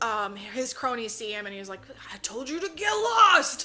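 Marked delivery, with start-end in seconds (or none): 2.1-3.7 very loud, high-pitched bad-guy villain shout. Retelling a scene where the villain addresses his cronies, in a bad guy villain voice. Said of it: "bad guy villain voice".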